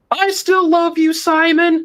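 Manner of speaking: acted, very high, drawn-out fan scream. Retelling a lone fan in the crowd: imitating a fan screaming. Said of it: "this lone voice scream".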